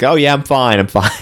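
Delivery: ordinary talk, nothing marked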